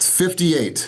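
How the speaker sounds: fifty-eight given extra weight. Reading out a list of numbers, leaning on the first: stressing fifty-eight. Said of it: "I said fifty-eight with an emphasis".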